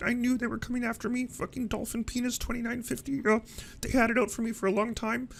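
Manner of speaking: high, mocking, paranoid-sounding voice.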